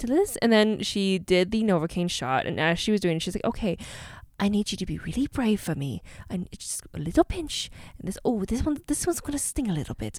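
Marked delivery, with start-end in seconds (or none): 3.4-10.2 put-on British accent, said more quietly. Retelling what the dentist said during the Novocaine shot: Rupam's British accent. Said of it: "she has the most beautiful and wonderful accent".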